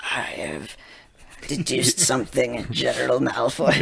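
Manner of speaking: put-on sinister emperor voice. Retelling a kid's hooded evil-general game: Palpatine voice. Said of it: "Doing his best Palpatine".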